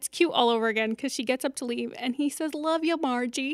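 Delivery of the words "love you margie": higher-pitched, put-on regional American accent. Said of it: "I love the accent".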